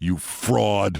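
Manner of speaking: put-on deep-voiced New York accent. Retelling what the jock added once the door closed, deep New York accent. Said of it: "the jock says to me in a deep voice, New York accent".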